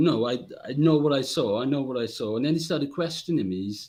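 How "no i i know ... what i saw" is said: ordinary talk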